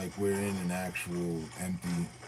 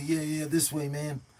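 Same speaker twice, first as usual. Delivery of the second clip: put-on young kid voice, higher pitched; 9 semitones higher, 4 dB louder than usual. Imitating the little kids on Call of Duty: imitating a little kid gamer. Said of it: "the little kids on Call of Duty".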